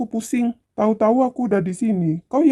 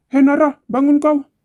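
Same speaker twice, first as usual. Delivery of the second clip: loud, raised shouting at full tilt; 5 semitones higher, 6 dB louder than usual. Waking someone who is sleeping beside him: shouting. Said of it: "jangan teriak-teriak gitu dong".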